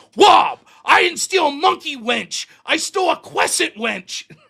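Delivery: angry, loud, high voice pronouncing R's as W's. Retelling how a schoolmate confronted him at lunch: imitating Joe who can't say R's. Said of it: "he couldn't say R's".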